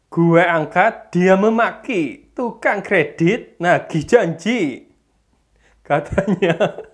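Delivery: thick, heavy Javanese accent. Testing a voice editor, the speaker tries out a thick Javanese medok accent. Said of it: "kita akan coba tes ngomong medok".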